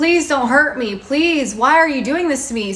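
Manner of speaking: put-on frantic, screaming voice. Retelling a scam call that used the speaker's voice, imitating someone screaming. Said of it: "I just keep screaming at somebody".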